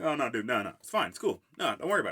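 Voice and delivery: put-on heavy, swooping sarcasm. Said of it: "the heaviest sarcasm I've ever seen".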